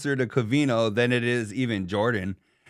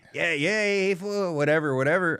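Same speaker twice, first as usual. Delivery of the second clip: put-on pitched-up Mexican American-style accent voice; 6 semitones higher than usual. Retelling how someone pictured the dog's voice, the speaker does Theo the dog as a vato. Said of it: "picturing Theo talking like a vato".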